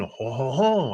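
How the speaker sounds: high-pitched, fake, bad French accent.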